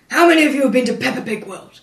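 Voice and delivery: loud, flustered, panicked blurting. Retelling how someone at a conference blurted a question: imitating a panicked question. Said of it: "he just sort of panicked and went".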